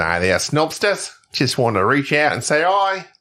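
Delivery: put-on Australian accent. Reading out an email from Australian listener Troy Clohessy: Troy Clohessy in Australian accent. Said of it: "I'm not going to do the accent the whole time".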